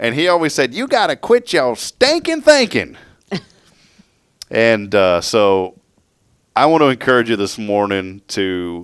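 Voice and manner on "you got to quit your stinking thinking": very high, sing-song, swooping, grating preacher voice. Quoting a pastor's favorite saying to the audience, Pastor Buzzy's annoying voice. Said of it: "he'd always talk like this".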